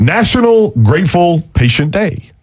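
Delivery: very slow, high-pitched words. Radio host announcing a tongue-twister interview topic: very slow. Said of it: "I have to say this slowly".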